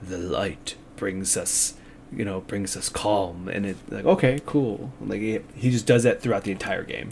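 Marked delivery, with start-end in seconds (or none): 0.0-3.5 grizzled voice, lower, quieter, slower. Imitating a game's narrator as the player lights a torch, grizzled narrator voice. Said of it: "He's just got a grizzled voice".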